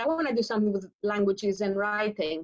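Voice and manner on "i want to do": usual speaking voice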